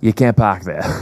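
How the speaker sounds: put-on broad Boston accent, laid on heavy. Retelling the listener's dad coming out to speak, in a very Boston accent. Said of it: "in the most Boston way ever".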